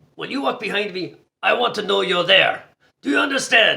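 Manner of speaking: put-on thick Austrian accent laid on heavily, loud and high. Retelling what an Austrian man said after turning around, in a thick Austrian accent. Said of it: "He was an Austrian guy and he had a thick Austrian accent".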